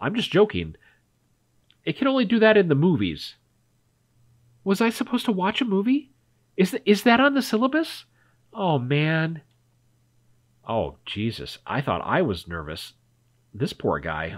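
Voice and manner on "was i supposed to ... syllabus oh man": confused, lost, bewildered tone, pitched up. Performer voices a lost classmate reacting to the narrator's joke, confused classmate. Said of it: "[name], the confused classmate. / those puppy dog eyes are getting to me. So is his stocky little body. / and he's kind of cute, / and he seems to be about my age. / I don't know. I'm so sorry. Should".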